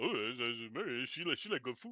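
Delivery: very quiet, soft voice, playing it cool. Acting out the teen as if he were Stallone: Stallone voice. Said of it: "Suddenly he's Stallone".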